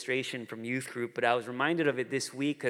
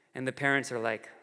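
ordinary delivery

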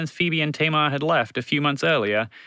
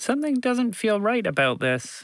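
anxious, uneasy, worried, pitched up; 6 semitones higher than usual. Montgomery the Mouse, hiding under a truck with Roger: anxious. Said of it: "Montgomery the Mouse said anxiously".

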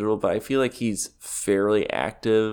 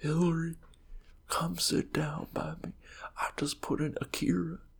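higher, quieter put-on Southern politician voice; 7 semitones higher, 9 dB quieter than usual. Joking about Bill Clinton watching a movie: Bill Clinton impression. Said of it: "hire us for our impressions".

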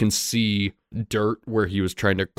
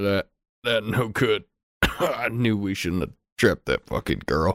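coughing, wounded, dying voice. Voicing a bound, bleeding bandit who answers the party: coughing wounded bandit. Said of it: "he still kind of coughs it up a bit".

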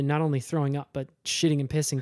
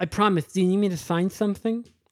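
put-on bad lisp, higher pitch; 4 semitones higher than usual. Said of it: "who actually has a really bad lisp".

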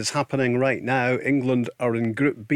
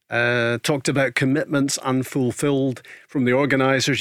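plain

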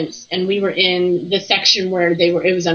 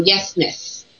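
mock whispered voice; 3 dB quieter than usual. Retelling a reply heard through headphones during an investigation: imitating a whisper. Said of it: "I hear a whisper go".

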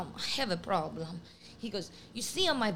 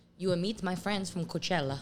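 put-on Italian accent in English. Retelling what a date said, imitating an Italian accent. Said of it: "have that type of accent".

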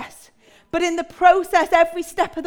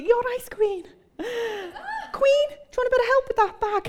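pitched-up, put-on Liverpool Scouse accent; 7 semitones higher, 3 dB quieter than usual. Retelling what people in the shops would say, imitating a Scouse accent. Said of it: "in that Scouse accent".

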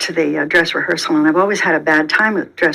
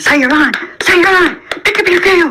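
put-on very high-pitched, shrill, demanding, insistent yell; 12 semitones higher, 5 dB louder than usual. Retelling how Tony banged the table at rehearsal: imitating Tony yelling. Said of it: "he's really yelling at me".

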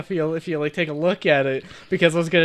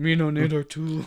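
put-on caveman talk, quieter; 6 dB quieter than usual. Describing a character who becomes a caveman: imitating a caveman. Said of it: "Harris just kind of becomes a caveman".

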